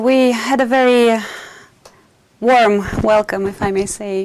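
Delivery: exaggerated, loud, slow ironic sarcastic praise. Answering an interviewer about the press reception: sarcastic. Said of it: "I'm exaggerating and I'm being sarcastic".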